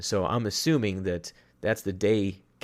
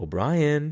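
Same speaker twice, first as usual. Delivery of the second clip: put-on eerily calm, menacing, pitched-up delivery; 7 semitones higher, 3 dB louder than usual. Retelling a game scene with a gun at someone's face: imitating Deacon's calm menacing tone. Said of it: "with such a calm tone".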